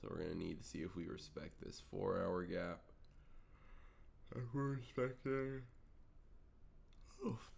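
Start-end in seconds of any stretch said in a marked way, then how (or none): 4.4-7.4 talking through a big, drawn-out yawn, pitched up. Talking viewers through what to watch off the open, yawning. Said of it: "sorry about the yawning".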